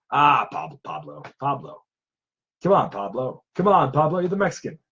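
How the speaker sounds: light put-on movie hero voice. Practicing an Ash voice, showing a lighter line: light Ash voice. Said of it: "he'll just say something very light".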